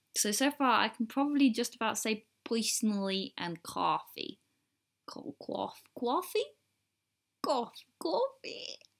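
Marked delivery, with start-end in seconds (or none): 7.4-8.7 put-on American accent, pitched much higher. Speaker practices single words, trying to sound American, in an attempted Marilyn Monroe accent. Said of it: "Does this sound American?".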